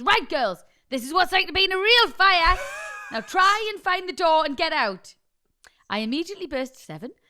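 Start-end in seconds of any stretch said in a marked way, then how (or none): 0.0-5.1 very loud, high, barked-out shout. Speaker retells what he shouted at the girls in the fake smoke: retelling a shout. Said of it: "And he shouts".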